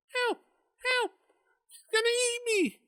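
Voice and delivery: tiny, very high-pitched squeaking cry. Game master voices a cry for help from the woods, small squeaky voice. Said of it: "Cries a small squeaky voice".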